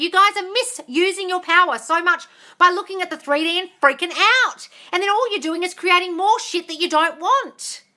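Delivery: high-pitched yelling. Speaker addressing listeners who message her expecting answers, yelling at listeners. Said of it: "I'm yelling at you".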